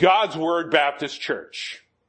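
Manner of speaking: mock booming, loud, excited calling out. Retelling a man who recognized them after a while: imitating a very loud voice. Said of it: "he says in a very loud voice".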